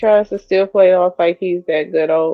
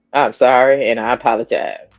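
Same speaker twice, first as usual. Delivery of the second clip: mock insincere tone, put-on, much lower; 5 semitones lower than usual. Speaker acting out a man's apology that sounded insincere: mock insincere apology. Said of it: "he was so not sincere".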